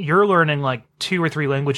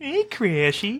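high-pitched New England cartoon-dad voice; 7 semitones higher, 3 dB quieter than usual. Retelling how Joe yells at kids in the next car, in a Peter Griffin voice. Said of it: "the perfect Peter Griffin voice".

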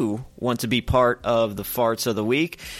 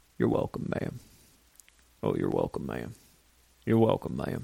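much lower, softer, gravelly country voice. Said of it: "have a little gravel in your voice, like you've been smoking".

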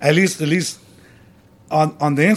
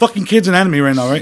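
usual speaking voice

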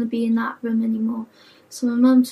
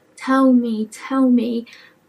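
ordinary talk

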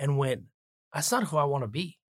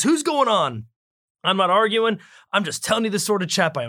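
mock yelling in a much higher voice; 6 semitones higher, 6 dB louder than usual. Retelling a man's reply in a story, imitating him yelling. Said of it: "You're clearly yelling".

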